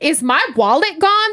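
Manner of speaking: high-pitched, exclaimed delivery. Digging through her purse at the bar, she retells her loud question. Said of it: "and I say hella loud".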